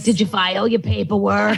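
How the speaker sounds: put-on animated cartoon woman's voice. Retelling how a hostess sounded, like the woman from Monsters, Inc. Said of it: "she literally sounded like the woman from Monsters, Inc".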